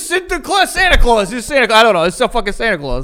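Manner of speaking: put-on Brooklyn accent. Picking up the other speaker's bit, imitating a guy from Brooklyn. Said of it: "how a guy from Brooklyn would say".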